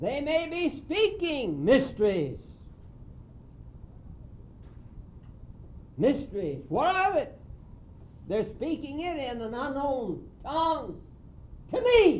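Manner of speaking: very high preacher shouting. Speaking to a room of listeners, shouting at them. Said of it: "Excuse me for shouting at you".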